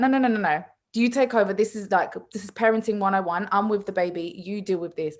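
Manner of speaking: normal talking voice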